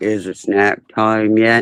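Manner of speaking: slow, drawn-out, dragging drawl. Voicing a dog's thoughts, comparing him to Eeyore: Eeyore voice. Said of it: "he's like Eeyore. He walks around like".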